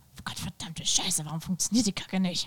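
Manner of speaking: mock angry German, acted cursing tone. Acting out swearing at a game screen: imitating her own angry german cursing. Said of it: "Just like that. Only angry".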